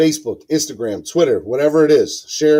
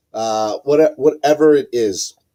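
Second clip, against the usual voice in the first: usual speaking voice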